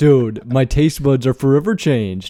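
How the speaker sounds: slightly masculine put-on voice. Imitating Matt's usual words back to him: imitating Matt, a bit more manly. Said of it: "he goes".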